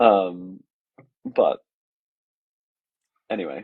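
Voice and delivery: voice holding back tears.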